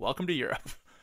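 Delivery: ordinary delivery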